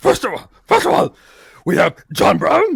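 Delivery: deep, low put-on cartoon monster voice. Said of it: "we can do cookie monster".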